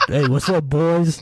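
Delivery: unhurried, slow, drawn-out delivery. Doing an impression of a friend getting hyped about the game: imitating Trigger Rick. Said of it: "This is my impression of Trigger Rick".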